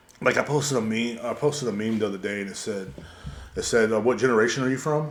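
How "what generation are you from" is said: ordinary talk, nothing marked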